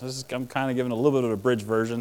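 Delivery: fast, rapid-fire Northeast-style talk.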